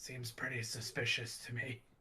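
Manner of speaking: whispered voice. Whispering in character to another player's character: whispering. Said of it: "I just kinda whisper".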